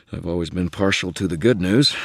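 plain

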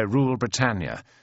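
ordinary delivery, nothing marked

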